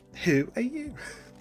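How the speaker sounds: put-on British accent. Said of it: "How did you like my English accent".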